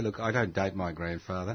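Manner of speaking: ordinary talk, nothing marked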